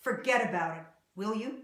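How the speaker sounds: angry, dismissive voice full of anger. Demonstrating how tone of voice expresses anger, angry tone. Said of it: "will hear the angry tone in your voice".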